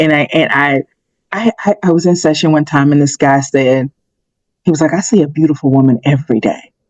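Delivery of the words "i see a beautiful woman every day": mock voice of awe. Retelling what a guy said in a session: imitating an awed tone. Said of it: "almost this awe".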